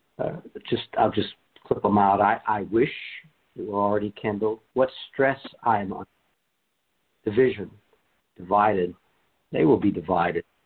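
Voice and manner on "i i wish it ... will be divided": ordinary talk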